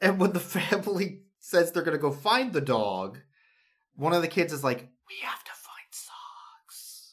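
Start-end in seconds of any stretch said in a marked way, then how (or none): 4.8-7.1 faint, slow, very quiet whisper. Retelling a story, one of the kids says this in the background: very quiet background line. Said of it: "very quietly in the background".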